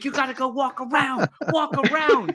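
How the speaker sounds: high, mild half-yelling. Retelling how a guy sped out yelling at them, imitating him yelling. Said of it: "yelling at us".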